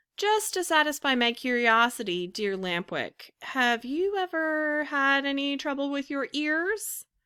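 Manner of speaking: sweet, high, persuasive wheedling voice. Narrator reading the puppet's question to his friend, sweet, persuasive voice. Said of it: "in a sweet voice full of persuasion".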